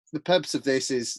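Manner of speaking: ordinary talk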